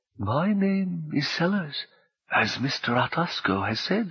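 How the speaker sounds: gentle, soft, slow voice with a smile. Answering a woman's angry demand, the faceless figure speaks: soft voice, smiling. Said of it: "she heard a smile in the soft voice".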